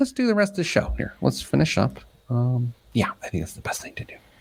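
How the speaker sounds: very soft, hushed, barely voiced whisper. Host wrapping up the rest of the show: whispering. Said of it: "I don't know why I'm whispering".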